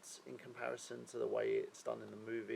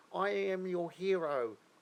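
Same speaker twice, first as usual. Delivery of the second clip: put-on English accent, loud, very slow, drawn out; 7 semitones higher, 7 dB louder than usual. A player mocks a game character's accent, in a parody English accent. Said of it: "I don't know why he's doing an English accent".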